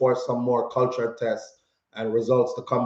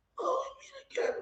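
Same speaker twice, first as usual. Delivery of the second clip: squeaky, high, barely-there, near-silent voiceless croak; 13 dB quieter than usual. Retelling meeting a man in a grocery store: imitating own lost voice. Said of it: "No voice".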